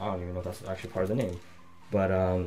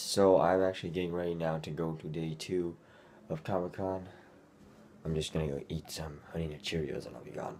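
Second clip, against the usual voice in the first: groggy, fresh-out-of-bed, just-woke-up morning voice; 3 semitones lower than usual. Speaker telling viewers about getting ready for Comic-Con day two, just-woke-up voice. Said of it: "my voice is kind of weird because I just woke up".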